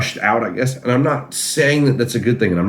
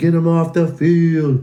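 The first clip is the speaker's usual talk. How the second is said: mock heckling yell, high-pitched and drawn out; 7 semitones higher than usual. Retelling rival fans at a game: imitating fans yelling. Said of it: "they're over there yelling".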